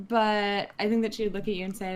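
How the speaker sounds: plain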